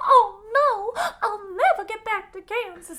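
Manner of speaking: very high voice with a long, drawn-out oh. Retelling the wizard leaving in the balloon, speaking as Dorothy: Dorothy voice. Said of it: "been doing this voice the entire episode".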